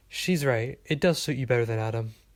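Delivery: ordinary delivery, nothing marked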